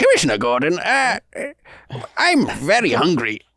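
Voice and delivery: safe, vague, mild Indian accent, played safe. Doing the Gandhi Batman bit for the group, Indian accent. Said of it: "he's definitely got an Indian accent".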